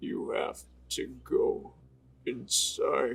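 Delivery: very slow, deep, creepy horror voice. Imagining the character suddenly switching voice: deep Meat Canyon style voice. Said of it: "a deep, like, Meat Canyon style voice".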